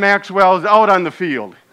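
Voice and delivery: ordinary talk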